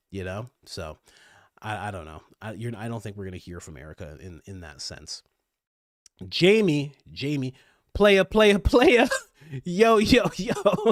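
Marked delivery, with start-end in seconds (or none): 6.2-10.9 high, loud, drawn-out put-on New York accent. Talking about Erica, a speaker does an Erica New York impression. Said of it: "Is that your Erica New York impression".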